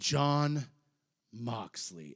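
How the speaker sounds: mock, very stern, commanding, loud call-out. Retelling how he answered the challenge at the mic, retelling a loud stern call. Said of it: "very loudly, very sternly just says".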